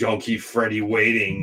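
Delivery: cool, creepy horror-villain voice, called out. Retelling how he hollered to the next person waiting: Freddy Krueger voice. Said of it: "kinda go into a Freddy, uh, voice".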